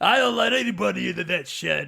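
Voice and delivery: loud put-on Brooklyn street-talk accent. Imitating a movie character who guards his shed: imitating a brooklyn accent.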